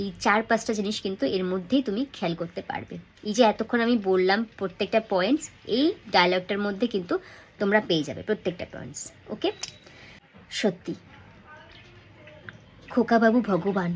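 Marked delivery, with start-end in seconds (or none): 10.5-13.9 sincere, heartfelt tone. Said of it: "প্রথম তিন line তোমাদের সাথে আমি শেয়ার করছি".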